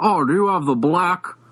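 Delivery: put-on Mid-Atlantic accented voice. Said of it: "he had that accent".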